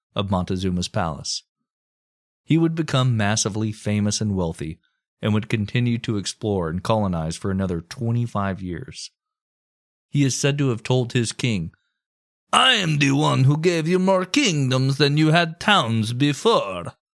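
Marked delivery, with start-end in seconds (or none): 12.6-17.0 put-on strange Italian accent, pitched up. Quoting Cortez telling his king: Cortez in strangely Italian accent. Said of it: "in his strangely Italian accent".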